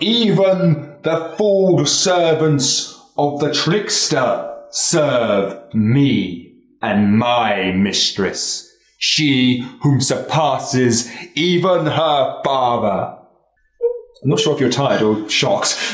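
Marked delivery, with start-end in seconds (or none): 0.0-13.2 big, scary villain voice, long drawn-out "me". Voicing a villain taunting the heroes: big, scary villain voice. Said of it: "this big, scary voice".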